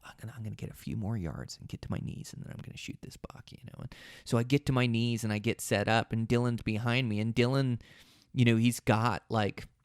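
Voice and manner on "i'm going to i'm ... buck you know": breathy, hushed whisper, barely audible. Retelling a hunt, quoting words to a partner: retelling a whisper. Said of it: "I whisper to Dylan".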